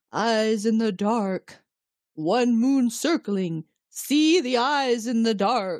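slow, eerie, bodiless disembodied voice. Recounting her dream, voicing what the voice tells her, in a disembodied voice. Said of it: "this disembodied voice is telling her".

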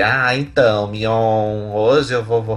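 slow, irritating voice, one word stretched out. Imitating how a reality show participant talked to the host: imitating her irritating voice. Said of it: "ela falando com aquela voz assim".

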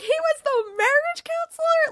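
very high, loud shocked squeal of disbelief. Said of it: "I'm like".

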